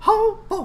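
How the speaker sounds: very high, very loud cartoon voice pushed way up. Showing how to get into character: Mickey Mouse voice. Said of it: "think what Mickey Mouse would do".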